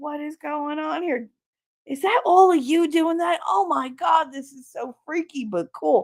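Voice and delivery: mock, very high, lost, baffled, bewildered voice. Retelling watching Joe when they did it around him, imitating Joe sounding lost. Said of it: "And he was so lost".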